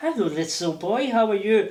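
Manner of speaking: put-on French accent. Man retelling meeting his future wife, imitating Isabel's French accent. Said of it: "I love it when he does Mummy's accent".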